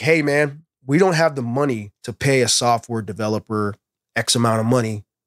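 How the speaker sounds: normal talking voice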